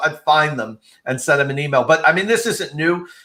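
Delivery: normal talking voice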